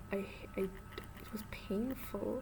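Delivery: pained, slow, drawn-out whisper.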